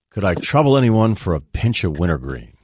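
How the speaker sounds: put-on polished sportscaster voice. Picturing Jim Nantz as a college student at the dorm: Jim Nantz impression. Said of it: "he comes by the dorm and goes".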